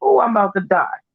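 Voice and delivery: put-on sarcastic tone, clearly not meant for real. Acting out showing up at a hospital: mock sarcastic. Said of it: "If I'm being sarcastic".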